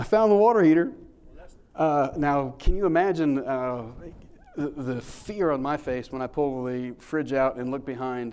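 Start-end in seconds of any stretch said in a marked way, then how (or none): 0.0-0.9 very loud outburst through laughter, pitched high. Retelling someone finding the water heater behind the fridge: imitating Bo laughing. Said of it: "There's Bo laughing, going".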